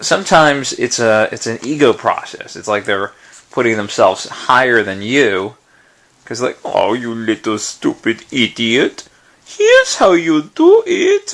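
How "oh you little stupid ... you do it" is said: slow, sing-song, patronizing and condescending sneer. Describing people who push advice, acting out how they seem to talk down: mock condescending voice. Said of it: "I don't think they do it in that voice".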